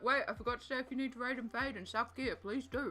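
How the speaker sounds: speaking with mouth full. Telling someone they may raid and fade, talking with mouth full. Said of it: "I put a massive mouthful of pizza into my mouth".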